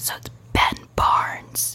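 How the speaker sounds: whispering. Telling friends a secret crush's name, whispering a name. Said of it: "I'm gonna whisper it".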